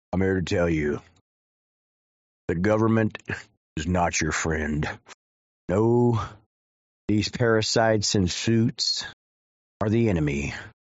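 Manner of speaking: very deep, rough, gruff truck-driver voice. Mocking a guy in an old video, speaker imitates his truck driver voice. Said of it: "he sounds like some truck driver".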